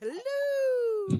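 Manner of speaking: "hello" stretched out, shrill, very high. Quoting a favourite line the way Robin Williams said it: Mrs. Doubtfire voice. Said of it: "a la Missus Doubtfire".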